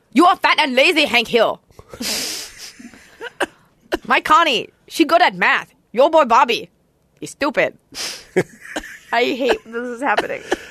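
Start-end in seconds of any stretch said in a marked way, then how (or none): 0.1-7.7 put-on Laotian accent. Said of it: "for the Hank King of the Hill goes like".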